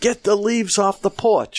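mock very high-pitched yelling. Retelling how a wife yelled about the porch: imitating a yell. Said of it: "My wife is yelling at me".

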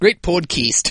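put-on Australian accent. Asked on a podcast to do it in an australian accent, put-on australian accent. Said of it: "Should I do this in an Australian accent? ... That's more New Zealand".

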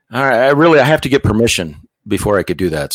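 normal talking voice

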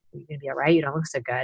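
imitated deep reassuring voice. Retelling what the man who got him to safety said, imitating a deep reassuring voice. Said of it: "He had a very deep sort of reassuring voice".

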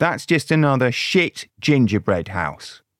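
ordinary talk

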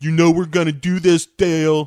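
put-on, affected California burnout drawl. Describing people on a show, the speaker mimics them in an affected California burnout voice. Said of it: "You know that kind of voice".

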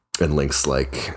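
ordinary talk

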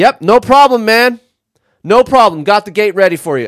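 very high-pitched, snippy, patronizing, condescending tone. Retelling what they told a man who had the gate first, mock-snippy reply. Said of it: "got a little snippy and was like".

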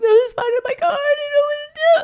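faint, barely audible, very high, rushed voice. Retelling a panicked call about a spider: imitating barely speaking. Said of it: "just barely speaking".

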